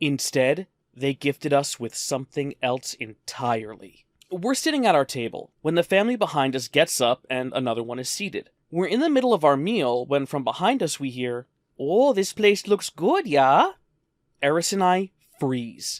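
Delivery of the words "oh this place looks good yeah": put-on natural Minnesota accent. Retelling a family overheard behind their restaurant table, in a minnesota accent. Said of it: "we had done the Minnesota accent before".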